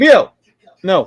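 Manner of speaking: loud, high yelling. Telling the dog Leo no mid-conversation: yelling at a dog. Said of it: "Why are you yelling at yourself?".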